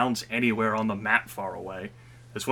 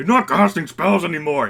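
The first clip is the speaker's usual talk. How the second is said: very loud, high-pitched in-character shout; 7 semitones higher, 8 dB louder than usual. Voicing a monster that shouts at its ally: shouting in character. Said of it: "he's shouting".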